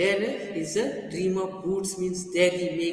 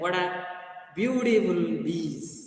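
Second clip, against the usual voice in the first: thick, put-on German accent. Reading a story aloud, voicing a man's remark, german accent. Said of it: "In German accent, he said".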